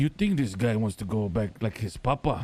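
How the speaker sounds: voice pushed as low as possible. Telling the boys about a moment in the server, imitating Speedy's deepest voice. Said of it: "the deepest voice he got".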